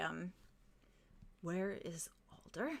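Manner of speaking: quiet, through clenched teeth. Narrating a scene, voicing a man asking a question softly through gritted teeth. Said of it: "gritted through gritted teeth, you just hear him very softly say".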